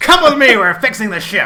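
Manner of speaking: very loud, high-pitched yell in a put-on voice. Voicing a character ordering the cannibals to follow him: yelling as a character. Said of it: "he yells".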